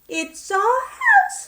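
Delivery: very high, squeaky little mouse voice. Narrator reads the mother mouse answering George; squeaky mouse voice. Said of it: "squeaked the mother mouse".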